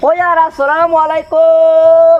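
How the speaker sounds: too-loud, slow, drawn-out bellowing. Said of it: "আস্তে কও না তে".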